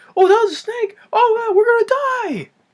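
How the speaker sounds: frantic, very high, rushed, panicky babbling. Describing how a character talks in the jungle, imitating fast, high-pitched panicky talk. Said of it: "Talking like that".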